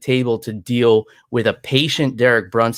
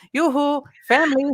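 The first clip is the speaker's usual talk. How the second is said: very high, teasing, playful yell. Retelling how she woke his wife, retelling a yell in her ear. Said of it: "yell in her ear".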